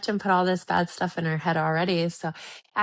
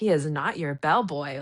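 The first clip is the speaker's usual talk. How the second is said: mock sassy tone with plenty of attitude; 4 semitones lower than usual. Recapping a scene and quoting the retort: imitating Marissa with attitude. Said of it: "with attitude".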